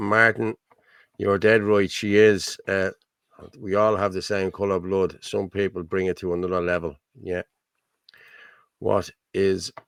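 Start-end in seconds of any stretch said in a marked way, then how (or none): none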